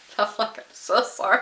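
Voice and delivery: laughing quietly while talking. Recalling being told off over a repeated joke, laughing while talking. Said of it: "I'm literally laughing to myself".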